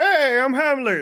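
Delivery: very high, loud cartoon pig voice. Imagining Ham in a new Toy Story film: Ham the pig voice. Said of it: "or however his voice is".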